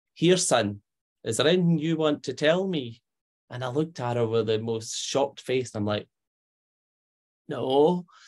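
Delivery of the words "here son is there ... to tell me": put-on lovely, beautiful Scottish accent. Retelling his mum asking him a question at the dining table, in a Scottish accent. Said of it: "with the most beautiful of Scottish accent".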